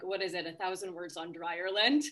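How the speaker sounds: ordinary talk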